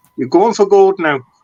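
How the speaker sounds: loud Irish accent with a high pitch. Channeling Henry Kelly for the person you are talking with, in a put-on Irish accent. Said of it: "That's my Irish accent".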